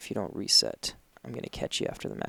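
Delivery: close, threatening whisper. Retelling what dad says during slacking at a match: imitating dad whispering. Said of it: "whisper in my ear".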